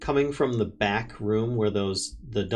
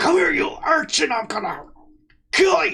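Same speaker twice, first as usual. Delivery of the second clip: very high, crying howl; 6 dB louder than usual. Voicing a man tearing through a door after someone: howling threat. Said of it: "a howl of somebody on the other side".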